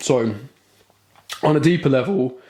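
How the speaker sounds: voice breaking and cracking mid-phrase. In the middle of explaining something, the speaker's voice cracks. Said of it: "voice break".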